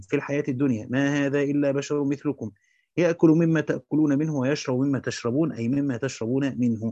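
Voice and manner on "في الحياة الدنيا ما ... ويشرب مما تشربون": plain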